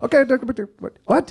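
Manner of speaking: bad put-on creature accent. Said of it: "the worst Jawa accent of all time".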